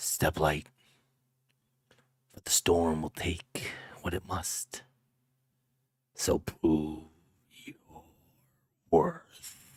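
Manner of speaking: faint, chilly voice. In a narrated game scene, a voice drifts across the room: faint, cold voice. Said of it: "faint as mist and cold as the mountain wind".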